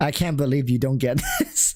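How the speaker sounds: condescending, sing-song, talking-down tone. Imagining a game character re-explaining everything to the player, mock-condescending tone. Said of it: "re-explained everything in a condescending tone".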